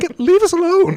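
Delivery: put-on shouting child voice. Imitating a studio shouting about AI: imitating Larian shouting. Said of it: "just shouting in the room".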